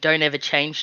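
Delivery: normal talking voice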